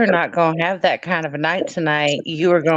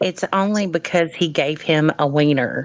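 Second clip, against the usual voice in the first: ordinary delivery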